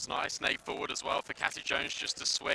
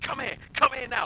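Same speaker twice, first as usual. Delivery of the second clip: very high, mock screaming; 10 semitones higher, 5 dB louder than usual. Acting out a woman calling to others as they run away, imitating someone screaming at them. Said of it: "Like screaming at them".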